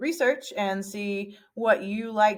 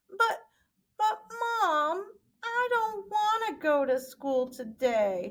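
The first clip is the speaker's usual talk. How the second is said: very high, drawn-out female character voice; 12 semitones higher than usual. Teaching how to voice characters, demonstrating a line in a high-pitched female voice. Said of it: "doing the high pitch female voice".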